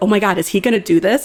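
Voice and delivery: put-on ecstatic, excited disbelief. Retelling watching Ryan lead the race: imitating past excited disbelief. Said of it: "we were ecstatic when Ryan was leading".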